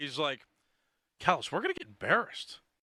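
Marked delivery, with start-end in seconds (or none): 1.2-2.6 put-on, half-whispered voice. Retelling a friend's worry about the game: Mackey impression, half whisper. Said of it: "talking through Mackey's voice".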